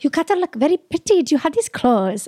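put-on Asia-region accent. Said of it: "do the accent".

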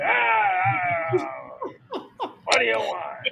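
very slow, rough street tough-guy voice. Retelling ordering at a pizza counter, the speaker imitates the man like the guy from Rocky. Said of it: "like the guy from Rocky".

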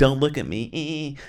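shy, shrinking mumble. Retelling how a character acted before changing: imitating a super timid voice. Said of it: "super timid".

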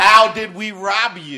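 put-on attitude. Acting out people questioning God, put-on attitude in voice. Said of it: "with an attitude in your voice".

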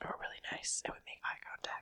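hushed, very quiet whispered aside. Joking about why they got the house: whispering. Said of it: "you could whisper a little less".

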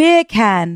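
"beer can" said with British pronunciation. Asked by the other speaker to try it, saying the words in a British accent. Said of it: "If you say beer can with a British accent".

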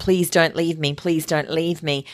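ordinary talk

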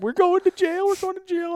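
mock very high, frantic, rattled-off panic. Retelling how she panicked about going to jail, imitating her freaking out. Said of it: "she's just like freaking out".

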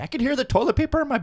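put-on angry voice. Retelling how a father-in-law with a new implant complained: imitating someone getting mad. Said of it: "he would just get mad".

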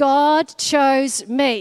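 loud, slow, proclaiming delivery spoken as a group.

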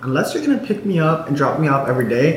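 ordinary delivery

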